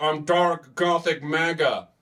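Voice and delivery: slow, drawn-out rallying battle-cry delivery, every word stretched. Retelling a man pointing at his hat on stage: imitating Elon Musk. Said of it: "see Elon Musk point at his fucking stupid Trump hat and be like".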